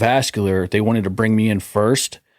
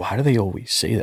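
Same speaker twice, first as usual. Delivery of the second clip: soft half-whisper, barely any voice; 4 dB quieter than usual. Retelling his wife's question while he was on the phone with the doctor, retelling a half-whisper. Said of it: "my wife like whispered".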